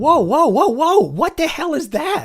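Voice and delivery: panicky, pitchy, very high voice. A narrator reads Mark spotting something in the dirt: Mark's pitchy, panicky voice. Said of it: "[name]'s voice went pitchy and panicky, / "Kid, listen to me. / [name]'s voice went pitchy and panicky".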